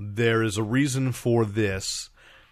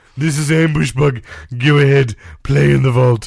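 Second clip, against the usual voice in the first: put-on fussy villain voice, higher and louder; 3 semitones higher, 12 dB louder than usual. Imagining Ambush Bug speaking in the Jonathan Harris voice. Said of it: "if Ambush Bug had that voice".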